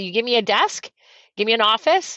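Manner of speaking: ordinary delivery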